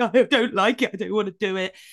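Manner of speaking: sobbing, tearful, crying voice. Speaker recounts protesting to the person she addresses: retelling own crying. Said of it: "as I was crying and going".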